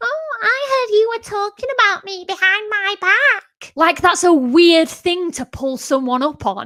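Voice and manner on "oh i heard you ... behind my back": mock patronizing, high, whiny American voice. Retelling how a housemate spoke to Emily: imitating a patronizing whiny voice. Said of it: "She's being so patronizing to poor Emily".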